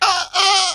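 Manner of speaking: high, laughing dolphin squeal impression.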